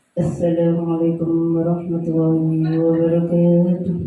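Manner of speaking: very low-pitched, level tone.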